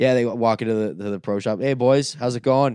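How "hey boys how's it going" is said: put-on Canadian guy accent. Acting out guys with the accent walking into the pro shop, fake Canadian bro accent. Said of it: "there are guys that just have this accent".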